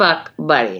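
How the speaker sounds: fuck in fuck buddy hit hard, buddy light. Comparing friend with benefits and fuck buddy, stress on fuck. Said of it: "the emphasis on the first word".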